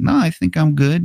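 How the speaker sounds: put-on high-pitched kid voice. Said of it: "And Billy's like".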